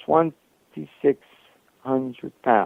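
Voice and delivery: very slow, drawn out word by word. Stating a weight figure for emphasis: very slow. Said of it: "I'm going to say it very slowly".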